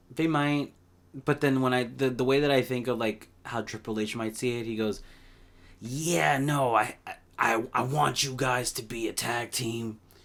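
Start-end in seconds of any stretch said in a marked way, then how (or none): 5.8-9.9 very slow, measured voice, each word drawn out. Imagining how Triple H might see it; Triple H voice. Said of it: "I'm trying to do his voice".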